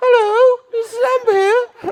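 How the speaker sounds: put-on elderly woman voice, loud and very high. Speaker retells how a man answers a phone call; old lady voice. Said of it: "he puts on the voice of an old lady".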